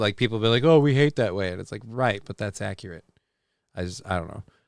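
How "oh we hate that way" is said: ordinary talk, nothing marked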